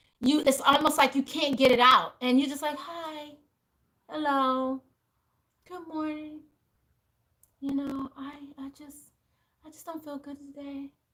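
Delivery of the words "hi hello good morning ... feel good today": very quiet, slow, feeble and weak low-energy voice. Showing how weakness comes through in someone's voice, imitating a weak voice. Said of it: "you can feel the weakness in the voice".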